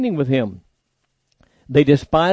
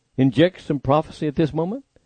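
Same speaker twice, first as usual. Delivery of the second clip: usual speaking voice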